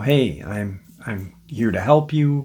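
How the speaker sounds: gentle, reassuring, soothing, calming voice. Retelling how a pregnant woman spoke to a trapped coyote: imitating a soothing voice. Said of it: "starts talking to this coyote in a soothing voice".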